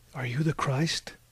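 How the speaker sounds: ordinary delivery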